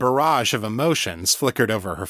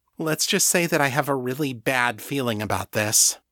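ordinary delivery, nothing marked

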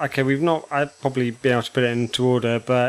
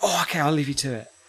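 acted-out super-excitement, quieter; 9 dB quieter than usual. Retelling how she reacted to the podcast talk, retelling a super-excited reaction. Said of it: "she got super excited".

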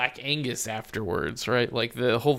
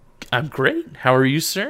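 cheerful, chipper, upbeat voice; 3 semitones higher, 7 dB louder than usual. A returning guest answers a welcome-back greeting, cheerful voice. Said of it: "this like cheerful voice".

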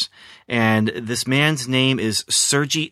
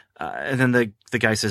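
normal talking voice

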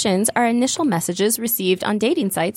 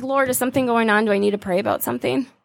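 normal talking voice

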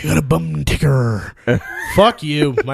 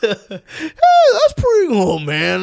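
sudden very high voice, drawn out slowly; 4 dB louder than usual. Showing how a voice suddenly changes: Jeff Bridges impression. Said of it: "his voice will change".

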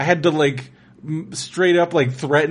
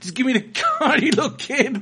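high, swooping yelling; 8 semitones higher than usual. Complaining about kids leaving mean comments, retelling own yelling at kids. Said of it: "So I'm like yelling at these kids".

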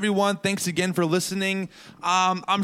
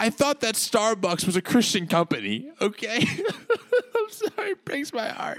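mock-upset, fake crying, pretend heartbroken and tearful; 3 semitones higher than usual. A podcast host opens the show pretending to be heartbroken: mock-upset, fake crying. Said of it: "I'm sorry I'm so upset".

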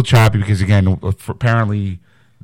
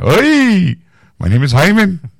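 put-on old man voice, pitched higher; 10 semitones higher than usual.

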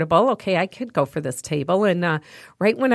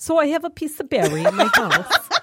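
very high-pitched, fake English accent; 9 semitones higher than usual. Asked by friends to do it again: put-on English accent. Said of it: "talk to John like that with that English accent".

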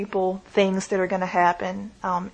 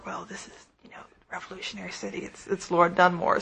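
soft, hushed, confiding whisper; 6 dB quieter than usual. Retelling what a friend whispered to a lady: imitating someone whispering. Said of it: "a friend kind of whispered to her".

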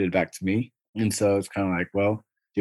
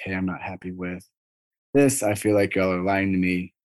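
ordinary talk, nothing marked

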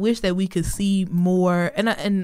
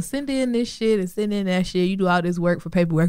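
normal talking voice

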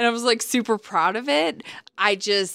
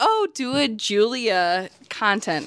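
plain

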